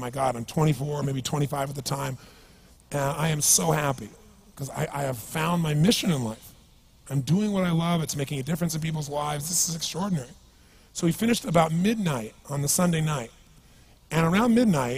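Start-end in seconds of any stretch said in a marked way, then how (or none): none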